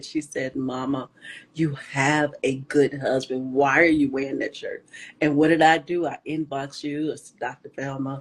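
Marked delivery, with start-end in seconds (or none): 0.6-4.8 put-on angry voice, lower. Retelling what the oldest daughter said: imitating a livid daughter. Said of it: "She was livid".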